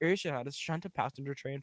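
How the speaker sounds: plain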